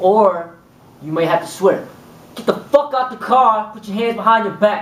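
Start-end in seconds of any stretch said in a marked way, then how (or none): 2.4-4.8 barked, raised, commanding tone. Demonstrating how to order someone out of a car, raised commanding tone. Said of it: "use your tone of voice and profanity".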